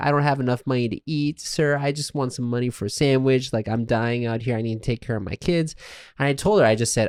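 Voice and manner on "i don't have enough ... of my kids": mock crying woman's voice, quieter. Retelling how a woman on the street begged through tears: imitating a crying woman. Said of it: "she's crying, like".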